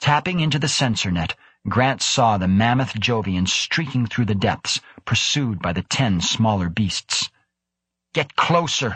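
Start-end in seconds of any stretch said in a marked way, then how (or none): 8.1-9.0 insistent, high-pitched, demanding tone. Krebs orders the crew during the chase: demanding order. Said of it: "Krebs demanded".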